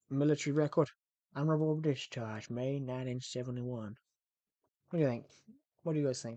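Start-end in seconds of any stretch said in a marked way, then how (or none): 0.1-3.9 slow, put-on Texan drawl. Performing a line from the film's script for the group, in a Texan accent. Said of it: "Good accent?".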